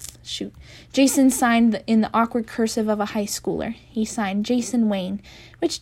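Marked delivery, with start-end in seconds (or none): none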